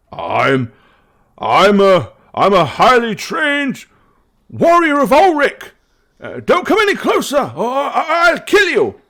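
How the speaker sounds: very high, frightened, stammering, nervous bluster. Voicing a hidden warrior warning the party away: nervous warrior's voice. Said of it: "then you hear a voice that says".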